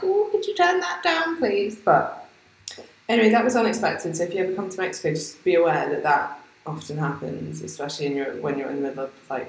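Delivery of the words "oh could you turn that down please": very high put-on old person voice. Speaker says loud music in mexico stops dinner conversation; sounding like an 80-year-old. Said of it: "I sound like an 80-year-old".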